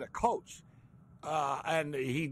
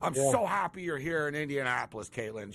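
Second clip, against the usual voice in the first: ordinary talk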